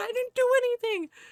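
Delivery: high, flustered, panicky put-on voice. Retelling how a scolded man answered a tita: imitating a panicked man. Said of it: "he actually panicked and said".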